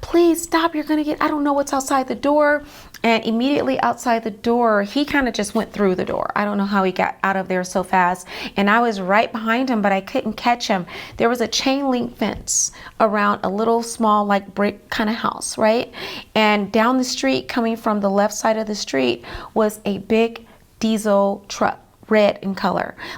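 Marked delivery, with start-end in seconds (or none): 0.0-2.6 high, panicked, pleading voice. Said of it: "I was in complete panic".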